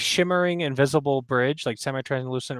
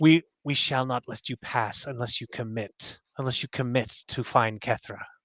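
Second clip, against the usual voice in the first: creepy whispering voice. Voicing figures whispering behind the player's ears: eerie whisper. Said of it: "you hear the whispering behind your ears".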